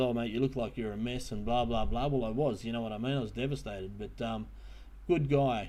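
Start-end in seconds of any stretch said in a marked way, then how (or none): none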